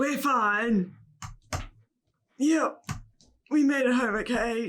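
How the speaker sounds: distressed tone, drawn out. Answering a worried caller that they got home, sounding in distress. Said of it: "She sounds like she's in distress".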